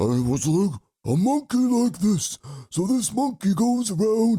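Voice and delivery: put-on very high-pitched old-man gorilla character voice. Showing the voice he used to play a monkey in a cartoon, old man voice with gorilla sound. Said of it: "that's kind of like my old man voice, but with a gorilla".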